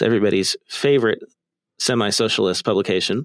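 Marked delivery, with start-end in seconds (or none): none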